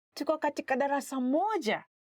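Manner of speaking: excited, surprised lift toward the close. Explaining how the sentence expresses emotion, voice raised toward the end. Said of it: "you kind of raise your voice a little bit".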